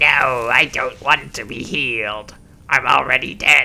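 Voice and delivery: put-on undead skeleton voice. Playing a game, voicing a skeleton who refuses healing: skeleton voice. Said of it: "How did you like my skeleton voice?".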